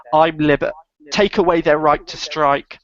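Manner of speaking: usual speaking voice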